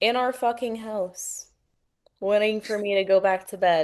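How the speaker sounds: ordinary talk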